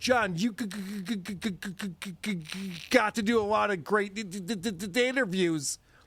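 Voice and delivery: very slow, repeated g- and d- stutter on got, interviews. Showing how real stutterers talk: imitating a stutterer. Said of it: "stutterers go".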